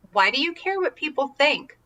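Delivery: composed, unbothered, very calm, even tone. Speaker retells a man's reply in a story, retelling a calm question. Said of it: "and he very calmly said".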